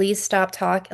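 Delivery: put-on pleading tone. Retelling a past moment when the speaker begged her: retelling own begging. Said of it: "I had to beg her".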